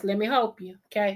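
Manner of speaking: put-on talking like an old granddaddy. Repeating "let me help you" in a grandfather's voice: imitating granddaddy's voice. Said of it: "In my granddaddy's voice".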